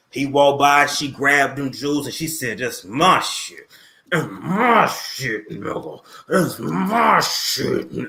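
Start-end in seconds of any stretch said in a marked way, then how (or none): 2.5-8.1 very slow, each word drawn out. Acting out Kris Jenner grabbing the bodyguard: acting out Kris Jenner. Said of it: "this is, uh, Kris Jenner, I'm the bodyguard".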